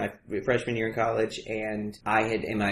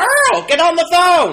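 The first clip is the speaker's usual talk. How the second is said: mock scream, higher and louder; 13 dB louder than usual. Retelling mother's reaction to coming out over the phone: imitating mother screaming. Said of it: "And she just screamed".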